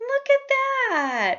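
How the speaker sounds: very high pitch with the word "that" drawn out. Imitating someone commenting on a new haircut: imitating a voice gone higher. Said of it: "When their voice gets higher like that".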